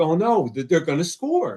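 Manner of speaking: anxious, fretful blurt with nervous, swooping alarm. Retelling a tense moment in a football game: retelling own nervous worry. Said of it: "I started to get so nervous 'cause I'm like".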